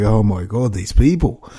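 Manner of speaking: ordinary talk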